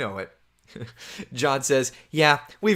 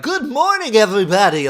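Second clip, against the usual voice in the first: loud, pitched-up television announcer voice; 7 semitones higher, 7 dB louder than usual. Recalling how the speaker sounded when starting in the business: old TV announcer voice. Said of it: "I used to have it like a television voice".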